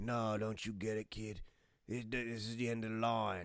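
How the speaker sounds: put-on British or Australian accent. Retelling what a character says to a kid, in a put-on british or australian accent. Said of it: "That's my British or my Australian accent".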